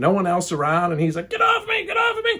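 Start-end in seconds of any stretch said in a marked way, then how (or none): 1.3-2.4 mock screaming in a very high voice. Retelling a struggle over a pocket object: imitating a man screaming. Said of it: "he is screaming and I'm screaming".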